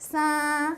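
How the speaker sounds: sa said with high, flat level tone. Teaching a tone written five five, the speaker says high level tone on sa. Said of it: "Tone one is a high level tone".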